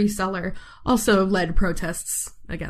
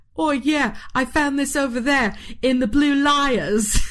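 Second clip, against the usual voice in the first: put-on pitched-up Cockney accent with "Lias" drawn out; 6 semitones higher than usual. Explaining how quarry workers named the Blue Lias, quoting them in a Cockney accent. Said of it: "they had a more Cockney accent".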